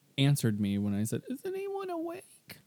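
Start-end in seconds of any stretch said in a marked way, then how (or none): 1.3-2.3 tiny, squeaky, very high, timid mouse voice. Retelling what they said when nobody answered them, in a timid mouse voice. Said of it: "like a little timid mouse".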